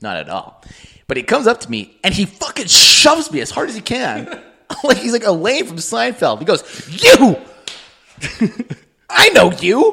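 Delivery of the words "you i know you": mock hyped, loud, very slow, drawn-out shout. Retelling how Danny DeVito came up and shoved him, imitating energetic Danny DeVito. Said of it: "he's like full of energy".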